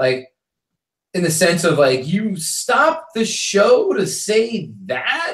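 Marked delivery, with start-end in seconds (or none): 2.1-5.3 very slow, sing-song, patronizing condescension. Showing how to repeat a heckler's words back to them, slow condescending tone. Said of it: "in a very condescending manner".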